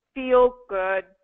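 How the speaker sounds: low, falling downswing on good. Speech lesson on being overly vocal in the downswing: low falling downswing on good. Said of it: "it's going to sound like this ... you notice how low my voice goes".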